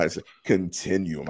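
deliberately deepened, would-be profound put-on voice. Using a fancy word about football to sound deep: put-on deep voice. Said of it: "I tried to say it with a deep voice".

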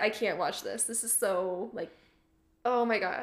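ordinary talk

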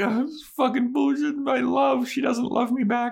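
acted-out, high-pitched, heartbroken sobbing. Retelling a rejected character's lament in an alley: imitating William the Bloody crying. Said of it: "he's crying".

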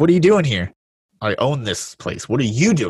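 put-on, half-shouted, restrained mild yell. Retelling a scene where she confronts Bombay, imitating someone shouting. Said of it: "and then she shouts at him".

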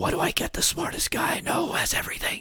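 soft, high-pitched whisper. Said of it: "Joe was whispering to himself".

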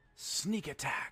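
high voice drifting as if wind-carried. Voicing a wind minion that gives itself away: voice on the wind. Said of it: "a voice on the wind that sounds a little bit like it's saying".

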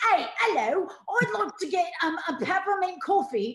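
very high, loud put-on cockney chimney sweep voice. Recalling a favorite old bit ordering coffee, in a cockney chimney sweep voice. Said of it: "my favorite used to be like a chimney sweep".

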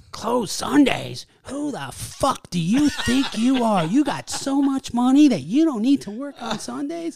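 put-on very high, very loud, shrill, indignant old lady voice. Retelling an angry phone message left by a caller: imitating an old lady caller. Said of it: "this old lady. She calls up".

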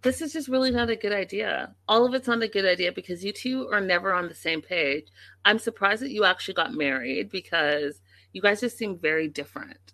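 ordinary talk, nothing marked

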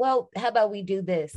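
ordinary delivery

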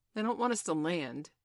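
plain

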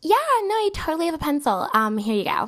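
put-on high made-up girl voice. Retelling how the second girl answered when asked for a pencil, put-on girl voice. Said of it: "let me give her a voice".

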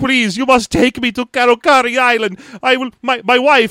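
put-on heavy Greek accent. Acting out a man stuck in a broken motorboat, in a thick Greek accent. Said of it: "a dude with a thick Greek accent".

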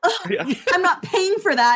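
annoyed, put-out tone. Retelling a movie scene where she is annoyed as things explode: imitating an annoyed character. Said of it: "I love how she's just, like, annoyed".

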